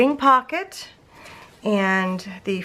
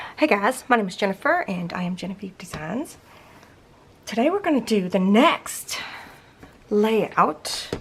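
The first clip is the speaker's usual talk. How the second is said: soft, half-whispered voice; 3 dB quieter than usual. Speaker introduces themself and today's layout, half-whispering. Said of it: "I don't know why I'm whispering".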